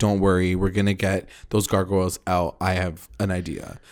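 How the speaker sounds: usual speaking voice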